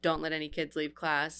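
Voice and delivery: ordinary talk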